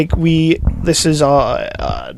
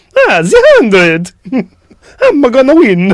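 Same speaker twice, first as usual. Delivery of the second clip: put-on Italian video game voice, higher and louder; 7 semitones higher, 5 dB louder than usual. Joking about how to say a hundred in other languages: Mario voice. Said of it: "It was like Mario".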